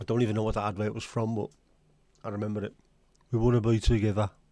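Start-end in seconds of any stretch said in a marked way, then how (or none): 3.3-4.3 put-on Brummie accent, louder. Quoting a remembered advert line, in a Brummie accent. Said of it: "all I can hear in my head is in a Brummie accent".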